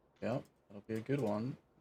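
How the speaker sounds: very quiet, flat, unenthusiastic, no spark. Answering a co-caster about the upcoming match: unenthusiastic. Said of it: "You sound so excited, [name]".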